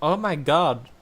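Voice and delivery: put-on strong, loud, very American accent. Describing a woman the speaker met, mimicking her very American accent. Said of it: "It was like this very American accent".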